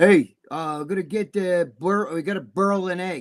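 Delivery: put-on New York Bronx accent. Making fun of how Jimmy talks, Jimmy's thick Bronx-Brooklyn accent. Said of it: "spoke with a heavy, like Bronx, Brooklyn accent. And Jimmy talks the same way".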